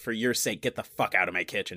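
ordinary delivery

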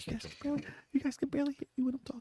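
high, hushed, mock soft-spoken voice. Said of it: "You're soft spoken".

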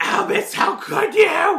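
shrill, screamy cry at very high pitch. Speaker mimicking how he delivers the line, imitating a screamy delivery. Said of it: "He is very screamy".

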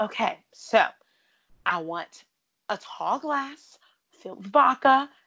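self-assured, confident, emphatic tone. Imitating Ramona ordering her drink: imitating Ramona, very affirmative. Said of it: "she says it with so much affirmation".

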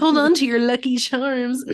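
storybook leprechaun voice with Irish accent. Repeating an earlier line to the other speaker, in a leprechaun voice. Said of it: "That was honestly the perfect leprechaun voice".

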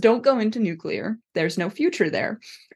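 serious, parental, fatherly mentor tone. Retelling a dad's warning to his teenage daughter: put-on dad voice. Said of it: "puts on his dad voice".

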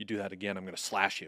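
put-on whisper. Retelling what an opposing kid whispered, imitating a whispered threat. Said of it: "You didn't hear him whisper".

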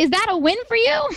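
mock, pitched way up, shaking with seething anger. Retelling own reply to him after a police stop: imitating own seething anger. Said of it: "He can see I'm just shaking mad".

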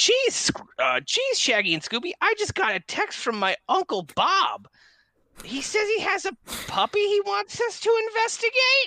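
very high, swooping, bouncing-pitch cartoon voice. Going back into a character bit with friends, speaking as Velma, Velma voice. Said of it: "I'm going to go back into my Velma voice".

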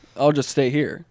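ordinary delivery

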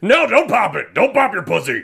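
play-acted horrified, mortified voice. Reacting to a clip, the speaker voices the father, sounding like Seth Rogen. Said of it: "do I sound like Seth Rogen right now?".

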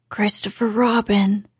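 stage whisper, loud. Stuck out of reach of the honey, he calls down to Christopher Robin in a loud whisper. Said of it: "he said in a loud whisper".

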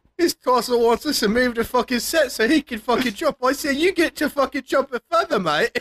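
put-on Australian accent. Riffing as a film crew member griping about an actor, mock Australian accent. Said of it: "This all became Australian".

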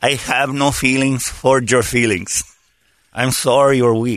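put-on Spanish accent, pitched low. Acting out what Holmberg said during a comedy bit, in a Spanish accent. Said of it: "in a Spanish accent".

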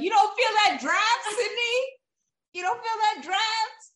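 very high, loud, exasperated, angry yelling. Retelling yelling at the TV while watching, imitating own yelling. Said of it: "I was yelling at the T V".

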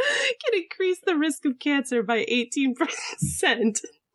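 talking through laughter. Reading a report aloud after being interrupted, laughing while talking. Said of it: "I shouldn't be laughing while I say that".

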